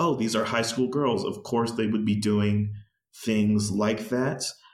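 ordinary talk, nothing marked

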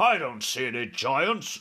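usual speaking voice

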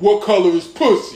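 usual speaking voice

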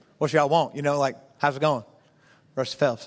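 put-on voice, audibly chewing gum while talking. Retelling a first meeting with a tense coach: impression of Coach Rusty Phelps chewing gum. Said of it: "is that pretty good impression of him".

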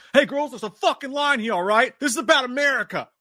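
very high, aggressive, combative freak-out rant. Retelling what a guy in a trailer says to the girls: imitating a public freak-out guy. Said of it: "This dude is every public freak out guy ever".

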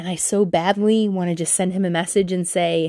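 ordinary talk, nothing marked

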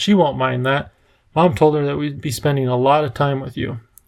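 plain

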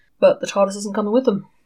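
ordinary delivery

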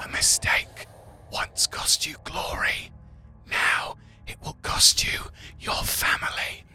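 hushed, whispered demonic voice. Voicing a demonic voice in Titus's head during the game: demonic voice. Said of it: "this demonic voice in your head goes".

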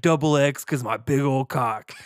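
put-on obnoxious douchebag voice. Retelling a friend's texts, imitating Joe as a douchebag. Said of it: "I'm making him sound like a douchebag".

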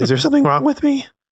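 put-on very high, fast pre-puberty kid voice. Imagining asking anyone in scrubs if something is wrong, in a prepubescent voice. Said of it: "In that prepubescent voice".

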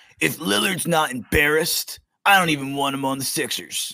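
put-on hammy older-generation voice, put on. Asked for his take, a speaker gives it in his boomer voice. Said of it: "I'm gonna do my boomer voice".

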